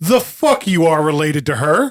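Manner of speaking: annoyed, irritated tone. Voicing a character who finally looks up at the player: annoyed. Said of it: "She's just so annoyed that it's gone this far".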